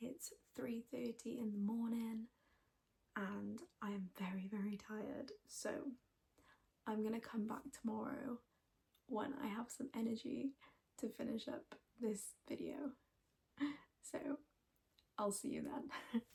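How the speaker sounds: very hushed, tired whisper. Signing off a crafting video at three thirty in the morning, whispering. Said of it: "I'm still whispering".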